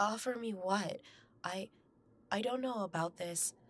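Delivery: halting, stuttering, stammering speech. The narrator answers a mysterious voice offering a gift, stuttering voice. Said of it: "My voice stuttered on its own accord".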